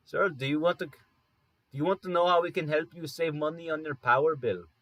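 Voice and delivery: put-on heavy, laid-on, thick Indian accent. Retelling a phone call, the speaker mimics a supervisor offering to help: thick Indian accent. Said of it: "the thickest Indian accent I've heard".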